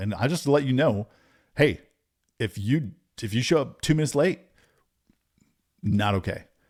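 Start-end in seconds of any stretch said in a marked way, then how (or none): 1.5-6.4 put-on confident tone. Describing how coaches set the standard, acting out their warning; retelling a confident warning. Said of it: "They got this confidence to them".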